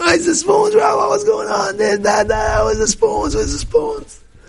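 very high, wild, frantic outburst. Retelling a guy missing a spoon this morning: imitating someone going wild. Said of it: "Going wild".

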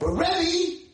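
very high, shrieking scream. Retelling what a teacher he met said to him, imitating a woman screaming. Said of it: "she's screaming at me again".

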